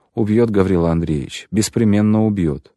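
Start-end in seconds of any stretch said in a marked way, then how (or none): none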